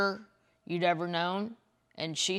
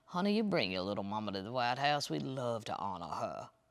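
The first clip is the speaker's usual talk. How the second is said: put-on soft voice, a touch more refined accent; 9 semitones lower, 7 dB quieter than usual. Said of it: "except in the Jimmy Carter accent".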